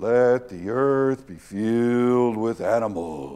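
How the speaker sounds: slow, deliberate, measured voiceover narration. Imitating a movie voiceover of God at creation: Morgan Freeman voiceover voice. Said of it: "get Morgan Freeman to come in and do the voiceover".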